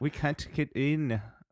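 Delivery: bad put-on German accent, young female voice. Imitating german girls after being asked for an impression: bad put-on german accent. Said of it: "your best impression of them".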